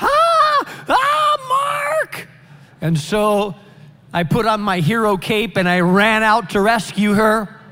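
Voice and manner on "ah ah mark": very high, frightened, panicked shriek, drawn-out ah, acted. A man retells hearing a woman shriek for him at home; imitating her yelling. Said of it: "She's yelling".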